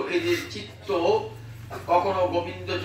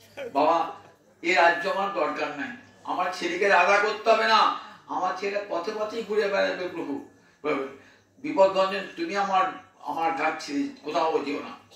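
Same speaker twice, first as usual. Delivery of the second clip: ordinary talk, nothing marked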